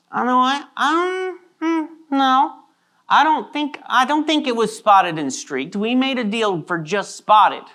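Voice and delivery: flustered, high-pitched, hesitant, unsure.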